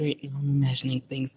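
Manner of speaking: soft, far-off mumbling to herself. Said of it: "She's mumbling to herself".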